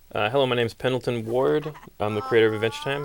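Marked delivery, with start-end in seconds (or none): 0.1-1.7 rising, question-like tune on the name. The show's creator introduces himself, saying his name like a question. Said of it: "say my name like a question".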